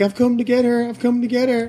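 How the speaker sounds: squeaky, very high-pitched, repeated. Imagining a queue of guys outside, imitating guys queuing outside. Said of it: "a queue of guys outside going like".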